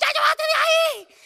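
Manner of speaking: very loud, high-pitched hollering. Acting out how the speaker yells at the boys, retelling a yell at them. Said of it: "yo grito muchísimo".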